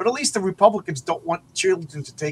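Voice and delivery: ordinary talk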